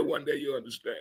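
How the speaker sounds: acted calm voice. Retelling a reply to a younger person who asked what he meant; retelling in a calm voice. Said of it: "said with a calm voice".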